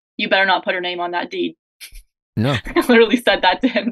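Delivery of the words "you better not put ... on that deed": mock-joking tone, underneath dead serious. The speaker repeats what they said to him about his home search, jokingly but dead serious. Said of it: "jokingly said to him, but like dead serious".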